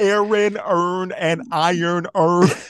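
put-on Baltimore accent, very loud and high. Talking about regional accents, imitate someone reading a test phrase in a Baltimore accent. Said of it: "the Baltimore accent".

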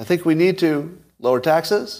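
uptalk, pitch lifting at the end on "taxes". Showing how an up talker sounds: rising pitch at sentence end. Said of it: "An up talker would sound like this".

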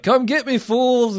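very high, hollered, acted-out screaming shout. Recapping a show scene, acting out a character's screaming shout. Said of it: "he's like screaming and shouting like".

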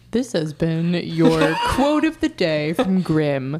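put-on broadcast announcer voice. Wrapping up a quote-of-the-day bit: announcer voice. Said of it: "I love your announcer voice".

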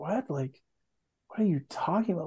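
bewildered, puzzled, confused, baffled tone. Retelling a film scene about Anakin, quoting Padme: imitating Padme confused.

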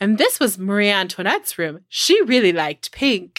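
put-on European castle tour-guide accent. Retelling a visit to marie antoinette's birthplace, imitating the tour guide's accent. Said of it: "I don't know why I said it like that".

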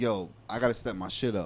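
ordinary delivery

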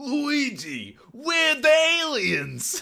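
put-on very high, loud London accent, drawn out. Deliver what you call the original Mario's famous line, as a Bob Hoskins impression. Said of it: "You do a very good Bob Hoskins".

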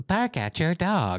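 put-on high, slow, drawn-out dumb girly voice. Complaining about a sound prompt, imitating that stupid girl voice. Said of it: "that stupid girl voice is like".

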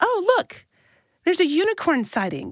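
mock, full-voiced, very high, swooping sing-song call-out. Retelling what a woman said to him and her friends, retelling a call-out in full voice. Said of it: "in full voice".

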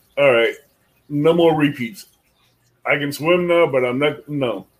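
ordinary talk

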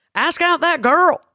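very high-pitched voice. Quoting a comedian's advice about asking a girl out: Theo Von impression. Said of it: "that's my Theo Von impression".

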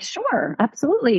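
ordinary talk

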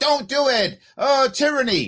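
very slow, high, stretched-out, drawn-out protesting cry. Retelling what the lieutenant governor yelled at him: imitating someone yelling. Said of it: "You were yelling at him and going".

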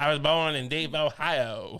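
put-on American accent. Mocking an actor's accent in a movie: imitating Ralph Fiennes's American accent. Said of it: "His accent's like".

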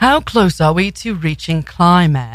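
put-on nature-documentary narrator voice with British accent. Imitating a documentary narrator's line: British documentary-narrator accent. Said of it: "In the British voice and he's like".

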